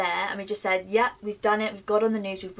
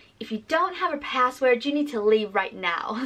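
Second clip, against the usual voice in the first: convincing put-on American accent; 4 semitones higher than usual. Retelling what the girl at the door said: imitating an American accent. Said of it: "in her little American accent".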